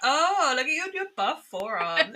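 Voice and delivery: high-pitched mock gushing tone.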